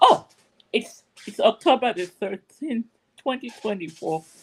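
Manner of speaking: speech broken up by laughter. Podcast host giving the date after a funny text: laughing while talking. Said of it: "I'm laughing".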